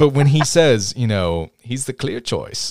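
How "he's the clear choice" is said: deliberately bad, breathy put-on voice. Retelling a movie scene in the character's voice: horrible Doctor Erskine impression. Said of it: "that's my horrible impression of the day".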